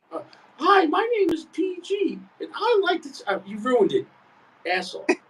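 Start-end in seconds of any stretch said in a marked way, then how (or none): 0.6-3.3 very high, slow, drawn-out teasing parody voice. Mocking a friend's cigar toasting habit, mocking impression of PG. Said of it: "it's a spot-on impression".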